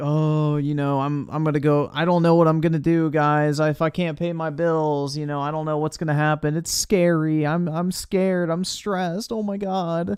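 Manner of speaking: high, loud, thickly guilt-tripping pleading tone. Mocking a streamer who is guilt-tripping his audience: imitating someone guilt-tripping. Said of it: "he's trying to guilt trip everybody".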